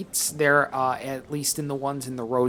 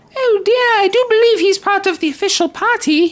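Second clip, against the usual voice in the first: put-on high fluttery voice, higher and louder; 9 dB louder than usual. Voicing a lady at a party: horrible Julia Child imitation. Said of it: "horrible imitation of Julia Child".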